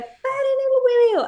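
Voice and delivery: woman's very high shrill shout, "el" stretched out. Retelling a woman at a march shouting into a microphone: imitating a woman shouting. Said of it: "la señora empieza a gritar".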